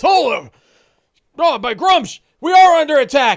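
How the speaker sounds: shrill, booming, very high, very loud orc call. Voicing an orc who sees the intruder on the stairs: orc shouting alarm. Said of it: "when he sees you, he goes".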